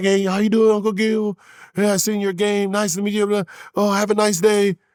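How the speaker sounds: put-on high, sweet, polite, well-mannered little boy voice. Imitating a friend's son being nice to his uncle: imitating a polite kid. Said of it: "he's like a little".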